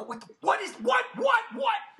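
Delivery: acted stunned disbelief, very high, sputtering, tripping over words. Retelling seeing the date on the tape: imitating own freaked-out reaction. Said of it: "I'm freaking out".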